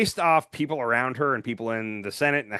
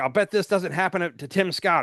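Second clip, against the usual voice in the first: put-on yelling, pitched up, protesting; 5 semitones higher than usual. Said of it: "when she was yelling at the".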